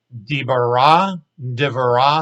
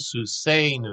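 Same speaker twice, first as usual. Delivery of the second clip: slow, heavy stress on the A syllable of susenu. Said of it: "the accent is on the, the A sounding syllable".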